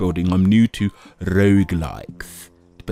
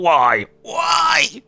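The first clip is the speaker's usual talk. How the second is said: very high, angry, aggressive yelled shouting. Opening a video by pretending to scold viewers: aggressive shouting. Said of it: "aggressively shouting at you".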